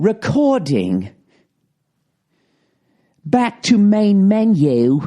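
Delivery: very slow, high English woman's automated announcer voice. Imitating the recorder's voice prompts: english lady's voice. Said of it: "this fucking English lady".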